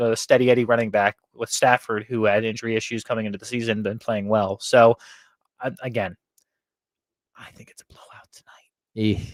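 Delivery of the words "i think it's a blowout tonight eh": whispering, much quieter. Discussing tonight's game with a co-host, wary of the other team's fans, whisper. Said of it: "I say that in a whisper".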